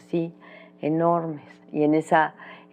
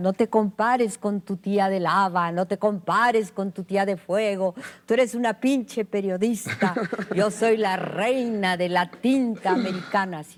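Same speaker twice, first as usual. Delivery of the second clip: yell, pitched higher; 4 semitones higher than usual. Retelling how an aunt yelled at the start of a journalism career: imitating Pita Amor yelling. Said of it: "me empezó a gritar".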